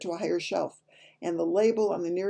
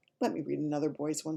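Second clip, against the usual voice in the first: plain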